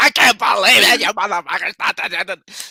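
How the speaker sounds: ranting delivery. Imitating the other speaker getting angry: imitating an angry Karen rant. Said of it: "she went full-blown Karen".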